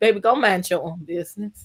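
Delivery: nice, flat monotone read. Discussing banter between Kimmy and Kiki, quoting Kiki: flat monotone Tabitha Reed read. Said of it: "in a very nice monotone Tabitha Reed almost type of read".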